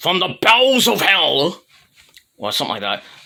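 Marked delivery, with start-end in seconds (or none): 0.0-1.6 high, slow, drawn-out dramatic ringside announcer call. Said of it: "Tom Stupid Idiot Phillips said".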